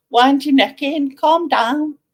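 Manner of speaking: thick, full-on broad Liverpool Scouse accent. Speaker tries out regional accents and goes full-on Scouse accent. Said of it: "full on fucking Scouse".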